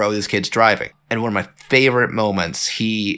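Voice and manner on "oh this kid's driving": usual speaking voice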